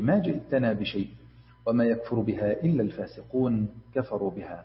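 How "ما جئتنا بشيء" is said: plain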